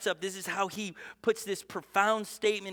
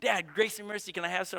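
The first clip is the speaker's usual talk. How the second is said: plain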